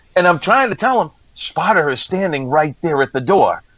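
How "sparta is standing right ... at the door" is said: plain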